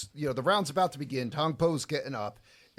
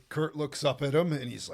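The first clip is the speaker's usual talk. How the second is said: ordinary talk, nothing marked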